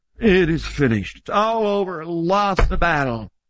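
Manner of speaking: beaten-down, resigned, slumped, defeated muttering. Acting out what Jesus did not say on the cross, mock defeated mutter. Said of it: "slump his head to his chest and mutter".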